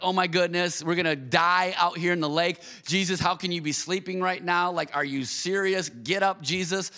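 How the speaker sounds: ordinary talk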